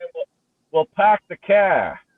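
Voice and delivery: put-on Boston accent. Joking with the others on a call: boston accent. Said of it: "I'll give you the Boston accent".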